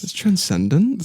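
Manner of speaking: voice tilting up at the end of transcendent. Quoting Trevor after recording an audition tape: Trevor voice with rising end. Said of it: "an uptick in his voice at the end".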